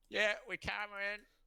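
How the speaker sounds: very high-pitched, loud yelled call. Yelling back to a sailor calling from the coast: yelling out. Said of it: "I'll yell, I'll yell out".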